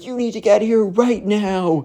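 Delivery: very high, bratty, spoiled shrieking. Retelling how a spoiled kid screamed at his butler: imitating someone screaming. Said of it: "he starts screaming as Butler".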